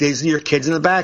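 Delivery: pointed, loaded, passive-aggressive hinting tone. Retelling a comedy set, pointing at parents of noisy kids: retelling pointed hinting remark. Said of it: "I kept saying it like that".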